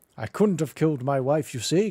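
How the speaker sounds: put-on, mocking British accent. Mocking a game suspect's British-sounding line: mocking British accent. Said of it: "'cause my accent isn't foreign".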